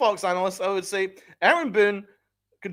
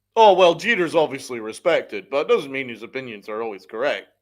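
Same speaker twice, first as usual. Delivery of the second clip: play-acted very low, sneering, snide delivery; 8 semitones lower than usual. Ranting about respected people's remarks, mocking a snide comment. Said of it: "Snide comments".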